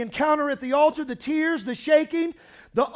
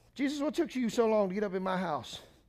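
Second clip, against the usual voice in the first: nagging, griping, complaining voice; 6 semitones lower, 10 dB quieter than usual. Acting out a complaint Peter's mother never made to Jesus: mock complaining.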